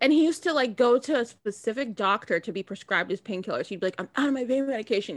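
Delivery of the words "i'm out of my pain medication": mock irritated, annoyed, put-upon grumble. Retelling someone's complaints about running out of painkillers: imitating someone annoyed. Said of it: "he'd be so annoyed about it".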